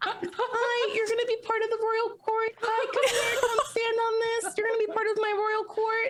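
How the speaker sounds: very high-pitched fairy-tale princess voice. Kneeling to coax chickens onto a cloth, princess-like voice. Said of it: "Is me princessing these chickens?".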